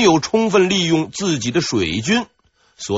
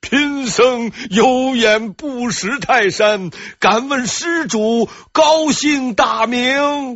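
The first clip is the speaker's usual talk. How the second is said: big, loud, high calling-out shout; 8 semitones higher than usual. The abbot calls after a man walking away: loud shout. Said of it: "大声喊道".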